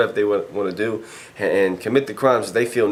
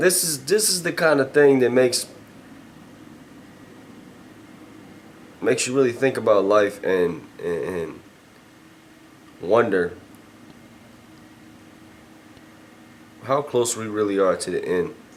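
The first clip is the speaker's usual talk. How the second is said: fighting back tears. Speaker, moved by events not directly about them: holding back tears. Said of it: "I'm trying right now so hard not not to cry".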